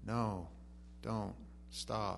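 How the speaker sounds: mock soft, emotionless, complete deadpan. Describing the scene where the kid grabs the controls; Willy Wonka deadpan. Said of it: "It's complete deadpan".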